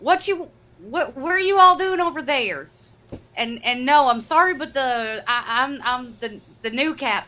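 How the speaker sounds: put-on southern drawl, stumbling over words. Taking a turn in the scene as the new captain, southern accent. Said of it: "southern accent".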